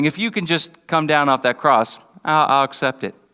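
usual speaking voice

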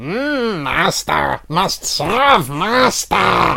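put-on goblin voice. Joking that their goblin voice draws goblins, quoting the goblins in goblin voice. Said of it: "My goblin voice".

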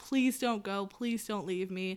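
mock crying, tearful pleading voice. Speaker retells grabbing their mom's legs, acting out crying and pleading. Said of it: "started crying on her feet, being like".

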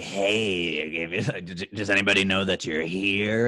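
unsettling, creepy voice with a drawn-out hey. Imitating Michael Douglas to show why he seems creepy: creepy Michael Douglas voice. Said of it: "it's that voice".

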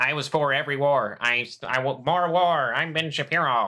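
steady, measured, slow, deliberate delivery. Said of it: "That's him".

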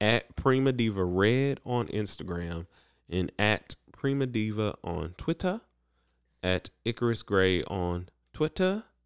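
put-on British-sounding accent. Reading out social media handles at the end, British-sounding accent. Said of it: "I'm saying it like I'm British".

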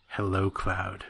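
low, sultry bedroom voice. Imitating a villain's line after mentioning his bedroom voice: Sephiroth bedroom voice. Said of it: "Sephiroth and his bedroom voice".

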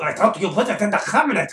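put-on Siberian accent with chattering teeth. In a scene, redoing the line as directed: Siberian accent, teeth chattering. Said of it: "with more teeth chatter".

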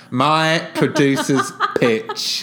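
put-on a bit drunk, loud, boisterous, swooping pitch. Asked why a co-host laughed, repeating the phrase in mock-drunk, very loud delivery. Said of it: "I just said it very loudly and a bit drunkly".

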